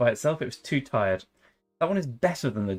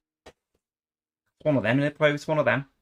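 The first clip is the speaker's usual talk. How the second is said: put-on, attempted Liverpool Scouse accent; 4 semitones higher, 3 dB louder than usual. Speaker trying out accents, in an attempted Scouse accent. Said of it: "That's my attempt at a Scouse accent".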